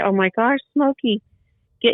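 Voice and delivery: high scream. Telling a story about a scare near your deck, retelling your own screaming. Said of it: "I just started screaming like".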